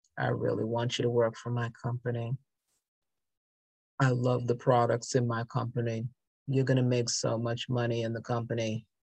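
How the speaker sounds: deadpan, dead-level, dry droning monotone. Speaker demonstrating a company pitch delivered badly, in a very monotone, dry voice. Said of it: "this is said with a very monotone, dry voice".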